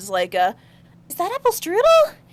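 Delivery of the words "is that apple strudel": very high, astonished, surprised gasp. Voicing a character who looks into a dome: gasping in surprise. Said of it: "she gasps a little bit".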